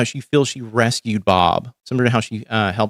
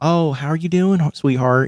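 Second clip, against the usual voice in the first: high, sweet, sugary Southern lady voice; 5 semitones higher than usual. Speaker describing how southern women greet you: imitating southern ladies. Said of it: "like Southern sort of thing where they're like".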